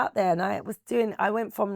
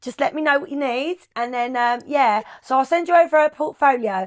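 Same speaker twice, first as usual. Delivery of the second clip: thick put-on Cockney accent, high and raised; 6 semitones higher, 7 dB louder than usual. Retelling how she used to pitch a model to clients, in a strong Cockney accent. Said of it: "I used to put a really Cockney accent on".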